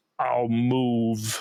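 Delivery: put-on gravelly voice, as if cigarette in mouth. Retelling a wrestler's reply with a cigarette in mouth: Harley voice, cigarette in mouth. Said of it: "without removing the cigarette from his mouth".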